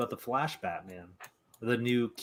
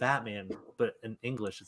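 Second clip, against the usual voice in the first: plain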